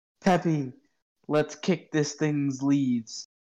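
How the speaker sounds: mild, rallying battle cry. Letting out a battle cry at a Pokemon: yelling battle cry. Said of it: "I will yell".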